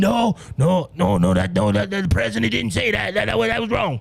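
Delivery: rough, creaky put-on voice with halting, stumbling repeats. Recalling Trump talking about the pandemic, doing a Doctor Fauci impression. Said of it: "I hate when I do his voice".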